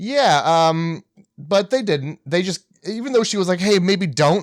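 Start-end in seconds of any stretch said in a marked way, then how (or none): 3.6-4.4 frightened, anxious, panicked and nervous voice. Recapping a scene, quoting the woman telling them not to: imitating a panicked voice. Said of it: "In like a panicked voice".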